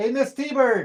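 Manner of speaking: loud, high-pitched yell. Calling out mid-talk to a woman working in her office, yelling. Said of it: "Sorry for yelling".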